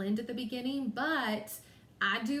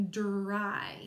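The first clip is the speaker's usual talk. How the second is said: dry, slow, long drawn-out delivery. Teaching a word, saying it really stretched out: stretched-out word dry. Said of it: "if I really stretch it out".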